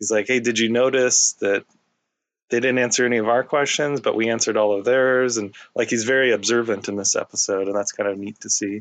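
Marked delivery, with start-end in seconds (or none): none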